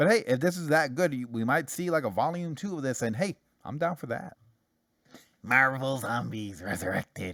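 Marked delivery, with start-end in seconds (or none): 5.4-7.3 low, growling undead zombie monster voice. Announcing a comic series title, zombie impression. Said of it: "that's my zombie impression".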